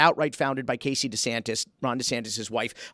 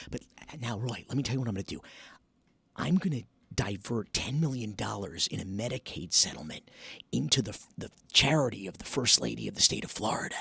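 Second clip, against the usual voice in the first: low, hushed, secretive whisper; 4 semitones lower, 7 dB quieter than usual. Demonstrating a whisper test with a suspicious example: whispering. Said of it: "we whisper something".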